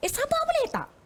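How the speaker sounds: very high, impatient, scolding tone. Acting out a mother telling her child to be patient: mock-impatient, scolding. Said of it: "dalam nada yang tidak menunjukkan".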